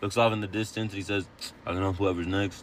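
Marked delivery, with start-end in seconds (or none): 1.7-2.6 mock deadpan, lower and quieter. Recounting a car dealership front-desk worker's reply, retelling a deadpan remark. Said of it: "he just goes deadpan".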